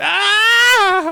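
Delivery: fake shrill, high, long-held drawn-out scream. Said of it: "should have a scream that happens when you cut".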